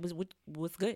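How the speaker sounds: put-on New York Bronx accent. Showing how they can take people's voices: put-on Bronx accent. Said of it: "I sound like I'm real from the Bronx".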